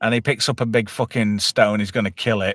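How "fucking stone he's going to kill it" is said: ordinary talk, nothing marked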